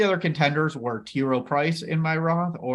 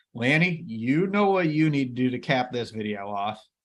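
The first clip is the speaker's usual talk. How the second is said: plain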